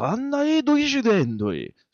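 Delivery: very high, swooping Japanese anime-dub voice. Retelling an anime scene, imitating the character's Japanese voice. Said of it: "but in Japan, it's just like".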